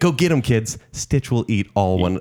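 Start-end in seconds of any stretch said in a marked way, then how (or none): 0.0-0.8 cartoon dog voice, proud, rousing, cheering tone. Imagining the matchup and acting out what Pongo would say: voicing Pongo. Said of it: "And then he'll be like".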